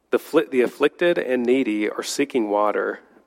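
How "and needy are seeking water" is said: ordinary talk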